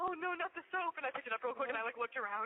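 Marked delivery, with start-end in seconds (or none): 0.0-1.0 mock frightened, dismayed, high-pitched cry. Retelling dropping the soap in the shower: retelling own scared reaction. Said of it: "I still got scared".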